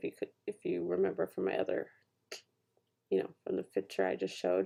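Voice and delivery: low, muttered mumble. Showing finished pages of a piece on camera, mumbling. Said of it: "Sorry, I'm mumbling".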